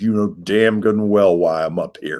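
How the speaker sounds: words pushed out through gritted teeth. Retelling what the angry coach said: imitating Coach Newton through gritted teeth. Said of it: "he grits his teeth".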